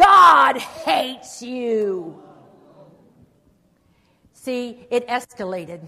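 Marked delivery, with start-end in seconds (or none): 0.0-2.2 booming, very loud taunting sneer, "you" dragged out. Recalling a man's final taunt at him, acting out a loud mocking voice. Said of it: "this voice loud and mocking".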